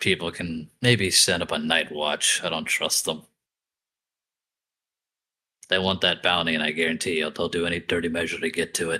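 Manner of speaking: loud stage whisper. Warning a companion in character after a fight: loud whisper. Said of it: "say it real loudly in the whispering tone".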